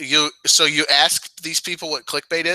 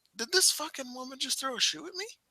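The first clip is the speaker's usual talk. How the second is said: very high, very soft mock stunned squeak, disbelief; 10 semitones higher, 13 dB quieter than usual. Acting out the reaction to a thrown shoe: imitating Sammy's shocked reaction. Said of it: "Sammy looked legitimately shocked".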